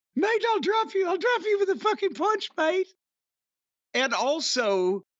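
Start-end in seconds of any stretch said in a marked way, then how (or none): 0.2-2.9 very high, squeaky chipmunk voice. Imitating a wrestler's threat: Grayson Waller chipmunk-like voice. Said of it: "that fucking voice that sounds like the lost chipmunk cousin".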